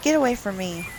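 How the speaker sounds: put-on hissing, snotty tone. Speaker imitating how she hisses at the others, mock hissing, snotty. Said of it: "she she hisses at them like".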